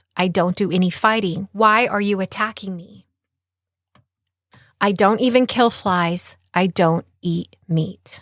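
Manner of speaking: ordinary talk, nothing marked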